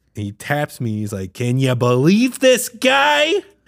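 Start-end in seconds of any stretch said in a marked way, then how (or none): 1.3-3.2 shrill, very high, drawn-out exasperated yell. Retelling how a man tapped his shoulder and spoke to him, retelling someone yelling. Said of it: "you're yelling".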